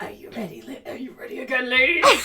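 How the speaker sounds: deep-voiced tiger. Voicing a tiger who greets the players: deep tiger voice. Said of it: "my tiger voice is very deep".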